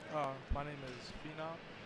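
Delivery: soft, mumbled, too quiet to be heard.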